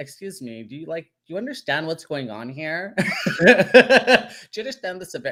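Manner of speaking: exaggerated, high-pitched put-on effeminate voice. Retelling what he said to people around him, in a really effeminate voice. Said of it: "really effeminate".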